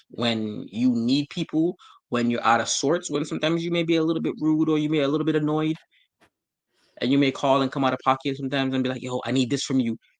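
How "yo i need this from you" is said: put-on desperate, pleading tone. Acting out calling a friend when you need help: imitating a desperate plea. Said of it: "they can hear the desperation in your voice".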